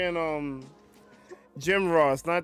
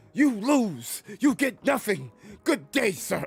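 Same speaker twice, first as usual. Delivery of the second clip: video-game announcer voice, much higher pitch; 5 semitones higher than usual. Answering a request, speaker says the quote in the For Honor guy's voice. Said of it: "say it in the freaking For Honors guy's voice".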